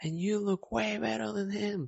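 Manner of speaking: put-on, high-pitched, called-out shout. Retelling what a woman shouted during the run: imitating someone shouting. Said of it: "she shouted".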